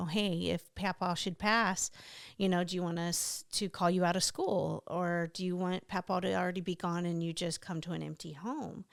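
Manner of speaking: ordinary delivery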